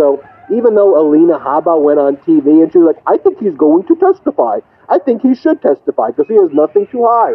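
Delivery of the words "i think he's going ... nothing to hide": high, swooping talking-head voice with wide pitch swings. Retelling what a lawyer said on TV: Alina Habba impression. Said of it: "that's my Alina Habba impression".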